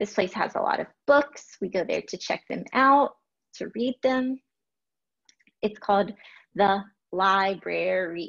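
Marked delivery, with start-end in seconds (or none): 7.1-8.3 library drawn out slowly, syllable by syllable. Listening for the beats in a word, stretching out 'library'. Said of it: "Notice how I'm really stretching out that word to listen for the beats".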